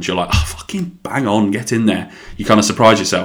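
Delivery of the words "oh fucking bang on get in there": ordinary talk, nothing marked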